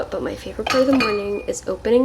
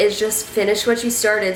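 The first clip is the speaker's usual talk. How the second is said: ordinary delivery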